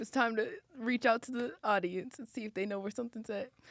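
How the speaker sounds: put-on crying. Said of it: "and then I'm crying".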